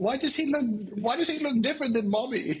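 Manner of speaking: very high put-on posh accent. Voicing a pet who asks about its father: posh accent. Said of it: "Now she's got a posh accent".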